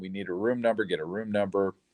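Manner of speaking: normal talking voice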